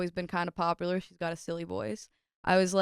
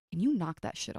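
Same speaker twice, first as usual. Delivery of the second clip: put-on angry scolding tone; 3 dB quieter than usual. Retelling how a mother came in and told her to stop: imitating an angry mom. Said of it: "my mom literally got so mad at me".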